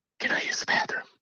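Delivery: soft, unvoiced, ghostly whisper. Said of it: "whispers in my ear".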